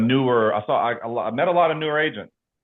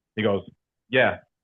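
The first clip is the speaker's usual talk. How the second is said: ordinary talk, nothing marked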